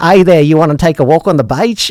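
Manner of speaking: over-the-top, cartoonish Australian accent. Mocking how Australians sound while saying they dislike the accent, Australian accent impression. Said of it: "I really don't like the Australian accent".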